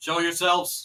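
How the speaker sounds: very loud, commanding, calling out. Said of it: "you hear a voice call out".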